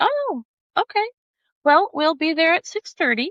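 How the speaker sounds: put-on casual cool tone. Retelling a woman's answer when the speaker invited herself along, imitating a cool casual reply. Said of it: "she played it off real cool".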